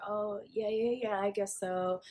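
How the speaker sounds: put-on awkwardness. Retelling a date's reply when the waiter asks about paying, imitating someone awkward. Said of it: "he gets mad awkward".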